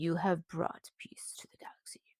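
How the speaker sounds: whispered voice.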